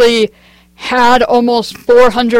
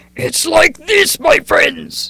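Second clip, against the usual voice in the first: rough-edged, high hero character voice, exclaiming; 5 semitones higher, 4 dB quieter than usual. Demonstrating a character voice they kept up for three days: Reinhardt voice. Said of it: "Reinhardt's tone is like this".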